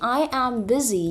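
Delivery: ordinary talk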